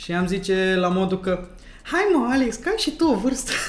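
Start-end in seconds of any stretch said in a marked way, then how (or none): 1.8-3.5 put-on high girlish voice. Retelling what a girl answered when asked a question, imitating the girl's voice. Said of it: "Fix cu vocea asta".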